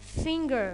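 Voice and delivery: fin- in finger stressed, extra clear, loud, drawn out. Demonstrating first-syllable stress in a list of words: first syllable of finger louder, longer. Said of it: "I made here the first part, the first syllable, louder, extra clear, and longer".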